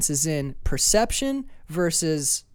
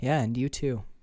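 put-on gentle soft voice, lower and quieter; 5 semitones lower, 5 dB quieter than usual. Retelling a character's calm reply in a film scene: imitating a gentle, quiet voice. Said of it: "really gently and quietly, never raises her voice".

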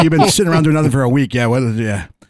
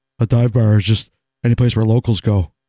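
put-on deep monotone voice, lower pitch; 5 semitones lower than usual. Telling others a man's definition of a dive bar in his presence, deep, monotone Polly impression. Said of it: "I love how he does my voice".

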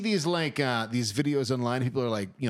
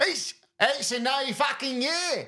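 mock Australian accent shout, higher; 12 semitones higher than usual. Answering a request to yell the line in an Australian accent: yelling in put-on Australian accent. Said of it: "can you yell in an Aust-".

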